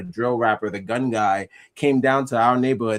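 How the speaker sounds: normal talking voice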